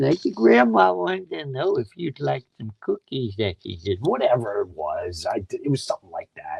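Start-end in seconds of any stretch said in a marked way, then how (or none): 0.3-3.8 put-on high, creaky old lady voice. Showing the grandma character he did as a teenager to make her laugh, in an old lady voice. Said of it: "I'd do this old lady voice".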